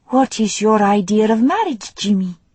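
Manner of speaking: unhurried, careful, gentle, very slow delivery. A woman who translates from Italian in her mind asks Jimmy something, soft and very slow. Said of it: "said in her soft voice, and very slowly".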